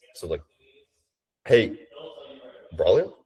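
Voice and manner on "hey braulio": "hey", a pause, then tune climbs and drops. Showing how the intro greeting is done, rise then fall across hey braulio. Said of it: "kind of like this, and then like comes down. ... Like the tonality comes up and then comes back down".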